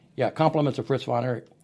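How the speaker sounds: ordinary delivery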